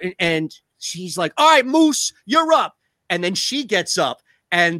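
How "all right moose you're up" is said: put-on loud New York woman voice, higher, louder. Retelling a sitcom scene, imitating a loud New York construction woman. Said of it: "stereotypical big New York City loud construction woman".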